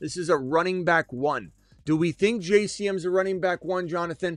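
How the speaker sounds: impassioned, high, passionate yelling. Show host challenging Jonathan's trade question, yelling. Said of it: "I'm only yelling at the topic".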